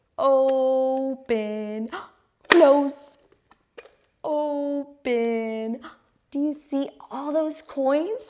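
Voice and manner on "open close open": slow, loud, excited, stretched-out vowels. Modeling a word for a child to copy, slow, elongated, exciting. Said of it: "say it slow, elongate those vowels, make it very exciting".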